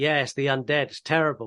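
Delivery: acted voice with a big grin. Retelling his answer when everyone asks if it is bad, imitating someone grinning. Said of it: "And he's grinning the whole time".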